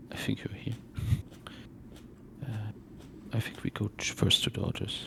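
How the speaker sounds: soft, unvoiced whisper under the breath.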